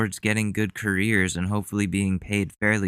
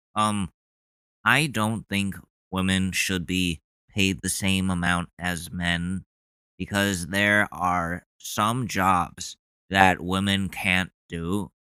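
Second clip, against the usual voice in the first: slow, drawn-out, um-filled, hesitant voice. Retelling what a classmate said in class: imitating a classmate. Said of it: "I'll do my best impersonation of him".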